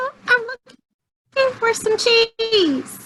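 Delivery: high-pitched squeaky mouse voice. Participant voicing a mouse character's dialogue bubble, high-pitched squeaky mouse voice. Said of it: "so I wanted to do a high pitched squeaky voice".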